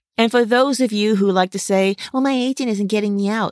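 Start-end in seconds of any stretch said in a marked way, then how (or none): 2.1-3.6 put-on mocking tone. Mimicking actors who blame their agent, in a mocking imitation. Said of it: "Yes, I'm mocking you".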